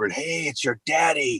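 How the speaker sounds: slow, drawn-out, hushed half-whisper. Retelling speaking to his crying newborn daughter: retelling a half-whisper. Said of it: "and I whispered".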